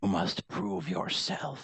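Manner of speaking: whispering spirit voice. Voicing a spirit speaking through whispers in the fog: whispering spirit voice. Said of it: "through the whispers, you hear it again".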